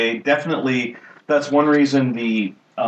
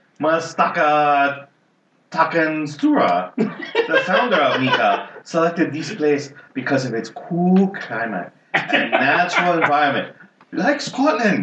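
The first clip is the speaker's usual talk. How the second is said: exaggerated, really bad Japanese accent. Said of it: "do I do a really bad Japanese accent".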